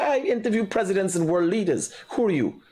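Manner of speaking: scornful, sarcastic delivery. Retelling own past reply to a caller: retelling own sarcastic reply. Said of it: "me sarcastic".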